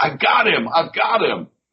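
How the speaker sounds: high, frantic, excited screaming, repeated. Retelling a fan who dragged him to his family: imitating a man screaming. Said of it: "he's screaming like".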